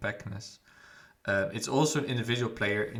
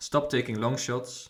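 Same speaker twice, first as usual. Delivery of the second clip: normal talking voice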